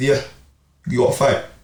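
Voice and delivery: ordinary talk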